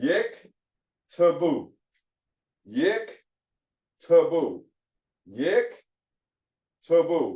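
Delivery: yik to boo sounded out slowly. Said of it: "First one is a syllable divider".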